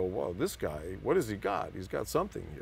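ordinary delivery

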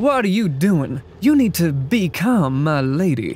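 put-on Wild West cowboy accent. Trying to do a transatlantic accent, the speaker slips into a cowboy accent. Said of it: "that wasn't was more very cowboy".

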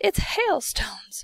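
whispering excitedly. Watching figures shower hailstones onto the world below, a character whispers, excited whisper. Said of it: "whispered James excitedly".

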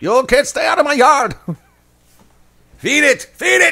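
hammy, really bad fake Scottish accent, very high-pitched. Acting out chasing kids from the yard at Halloween: really bad Scottish accent. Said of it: "a really bad Scottish accent".

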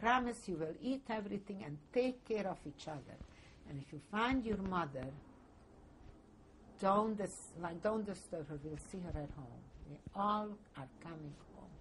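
plain

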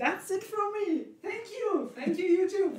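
high, loud, cheery, excited voice.

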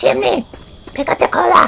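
very high-pitched, rough, raspy put-on voice. Quoting Susan telling Chimney to pick up the cola: Susan voice. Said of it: "that's my best Susan voice".

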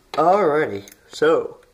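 high, loud words spoken right through a yawn. Feeling snoozy while starting a coat hanger craft demonstration: yawning. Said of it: "excuse me for yawning".

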